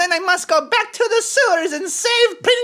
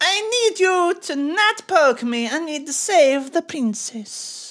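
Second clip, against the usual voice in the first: full, put-on Italian accent; 2 semitones lower than usual. Speaking to a nurse in a role-play, in an Italian Borat voice. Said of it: "You're like an Italian Borat".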